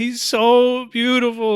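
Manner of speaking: put-on crying voice. Retelling a video of a girl waking from surgery: imitating someone crying. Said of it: "this girl was, like, crying".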